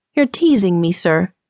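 ordinary delivery

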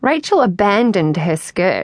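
plain reading voice

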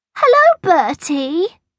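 trilling call, very high. Angela, who has long loved him, greets bertie in the playground, trilling. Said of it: "trilled a voice".

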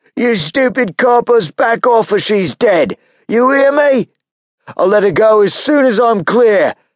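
very high, loud, shrill, threatening shouting. Narrating a shootout, the gunman stops firing and calls out to the police: shouted. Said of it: "stopped mid-blast and shouted".

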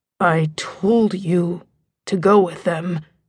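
words growled out like a feral beast. Narrator reads his words as he holds the narrator's hand, growling like a feral animal. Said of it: "He growls the words like a feral animal".

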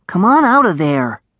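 whispering. Narrating a story, a character coaxes a hidden dragonling out of a pouch: whispered. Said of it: "he whispered".

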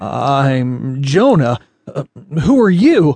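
very slow, halting stammer with drawn-out start. Narrator reading a man meeting a talking possum, stammering. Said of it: "Stammered Jonah".

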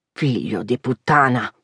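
very deep, low, angry growl. Reading a story aloud, voicing the father's curse: growling. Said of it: "he growled".

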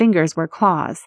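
ordinary delivery

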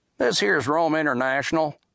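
drawling delivery. In a darkened theater, Starr talks over airport footage to Diamond; drawling. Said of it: "Starr drawled".

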